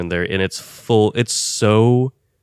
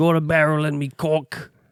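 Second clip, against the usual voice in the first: fake British accent, pitched up; 8 semitones higher than usual. Joking that this is how all British people sound: mock British accent. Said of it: "That's what all British people sound like".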